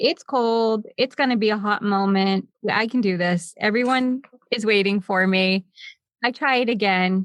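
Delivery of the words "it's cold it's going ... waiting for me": usual speaking voice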